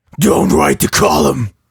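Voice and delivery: fake, put-on voice trying to sound intimidating. Testing whether their voice can intimidate anyone: fake intimidating voice. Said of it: "Now you just sound like my little brother trying to intimidate".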